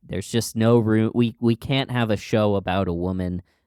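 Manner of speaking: usual speaking voice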